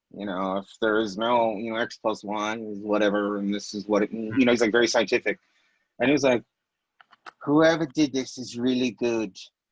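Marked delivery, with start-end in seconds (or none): 7.4-9.4 imitated English accent. Quoting a man they interviewed, imitating his english accent. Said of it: "That's his English accent".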